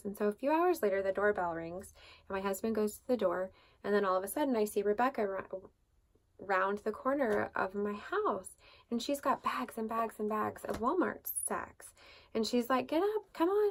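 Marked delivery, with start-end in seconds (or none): 12.9-13.7 put-on funny little Southern accent, very high pitched. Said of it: "she has this funny little Southern accent".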